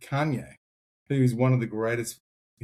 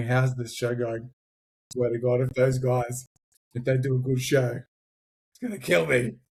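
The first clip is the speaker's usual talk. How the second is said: play-acted breathless over-breathing and panting gasps. Imitating Pete worrying about how the show is going: imitating Pete hyperventilating. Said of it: "hyperventilating, going".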